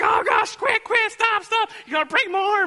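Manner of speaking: put-on shrill, very high, pained screaming like a little girl. Speaker imitates a junior guy pinned on the ground, imitating screaming like a little girl. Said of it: "He's screaming like a little girl".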